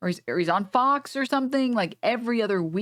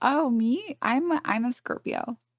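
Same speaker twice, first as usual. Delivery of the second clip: very slow, put-on, ditzy airhead voice; 3 semitones higher than usual. Asked to say it again, the speaker answers in the bimbo voice. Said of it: "Do it in the bimbo voice too".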